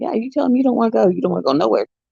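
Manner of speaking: fast, high-pitched, freaking out. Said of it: "freaking out, going".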